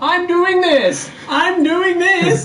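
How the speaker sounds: high, slow, loud shout.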